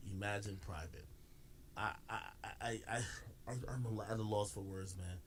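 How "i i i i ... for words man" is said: very slow, drawn-out stutter on I. Reacting to a viewer's comment, at a loss for words: stuttering. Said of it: "I'm stuttering like I'm Flacco".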